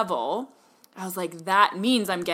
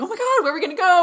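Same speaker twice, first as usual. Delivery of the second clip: thrilled squeal, pitched very high, loud; 12 semitones higher, 7 dB louder than usual. Speaker retells first reading about a $5,000 travel voucher: retelling being all excited. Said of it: "We're getting all excited".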